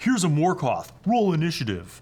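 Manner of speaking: dopey dummy voice. Repeating what a dummy would say about a high-level adventure, in the dummy voice. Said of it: "I did that in the dummy voice".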